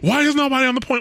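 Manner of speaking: very high, frantic, freaking-out shout. Retelling a teammate in a game shouting about the point: imitating a guy shouting. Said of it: "a guy shouting".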